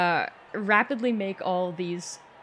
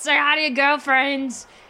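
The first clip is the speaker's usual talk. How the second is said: loud, pitched-up yelling; 8 semitones higher, 6 dB louder than usual. Being steered away from a fight, the character yells back, yelling. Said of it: "I yell in Draconic to Gersh".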